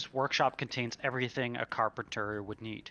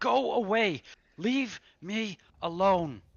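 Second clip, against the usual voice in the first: put-on slow, high-pitched old man voice, hollering; 9 semitones higher, 5 dB louder than usual. Voicing an old figure shouting from inside a door: old voice shouting. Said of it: "He continues to shout".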